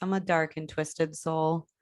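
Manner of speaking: usual speaking voice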